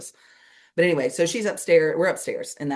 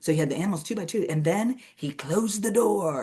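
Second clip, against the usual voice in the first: mock theatrical, all-drama, grand storybook narration; 4 semitones higher than usual. Retelling how a woman told the Noah story: imitating dramatic storytelling. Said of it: "she'd be all dramatic in it".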